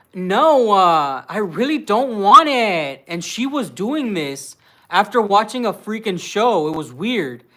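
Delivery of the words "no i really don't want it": put-on very slow, drawn-out, lazy American-girl accent. Showing how people speak in a Kim Kardashian accent. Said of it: "the Kim Kardashian people speak like".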